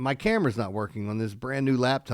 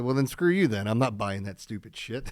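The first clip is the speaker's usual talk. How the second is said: plain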